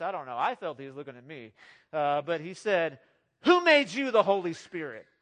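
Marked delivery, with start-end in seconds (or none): 3.4-5.0 very loud, firm and stern. Retelling how a gentle elder pointed at the speaker, quoting him in a firm voice. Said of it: "In a pretty firm voice".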